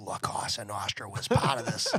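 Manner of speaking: hushed, secretive, low half-whisper. Speaker retells how a private investigator said it, imitating Maguire's half-whisper. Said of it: "he whispers. And he's like".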